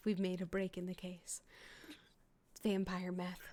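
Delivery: hushed whisper, very soft and quiet. In the game, Colette answers a whispered question: whispering back. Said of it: "she whispers back".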